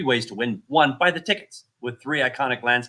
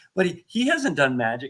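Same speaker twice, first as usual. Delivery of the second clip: usual speaking voice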